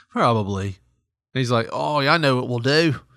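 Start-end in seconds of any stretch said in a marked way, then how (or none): 1.7-2.9 put-on, fake Australian accent. Imagining what a shoplifter in a news story thought: put-on Australian accent. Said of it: "I don't know why I made him Australian".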